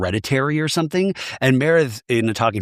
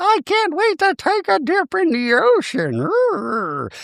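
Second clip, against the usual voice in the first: very high, silly, playful put-on voice. Retelling a scene with inflatables: imitating Meredith's put-on voice. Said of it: "Meredith keeps doing the voice".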